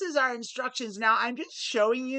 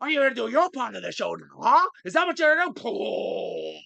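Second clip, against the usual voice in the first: fiery, hot-headed movie tough-guy voice. Breaking into a bit on the show, the speaker does a Pacino impression.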